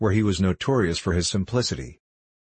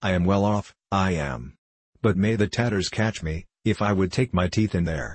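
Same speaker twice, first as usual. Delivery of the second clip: plain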